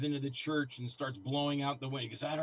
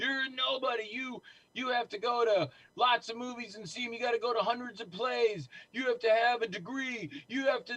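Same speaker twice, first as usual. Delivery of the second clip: yelling in a higher pitch; 9 semitones higher than usual. Retelling being reprimanded over the phone: imitating someone yelling. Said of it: "he just started yelling at me".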